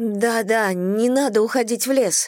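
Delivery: high, quavering, shaky, trembling voice. Reading Madison's line to the two others in the story, trembling voice. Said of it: "дрожащим голосом произнесла Мэдисон".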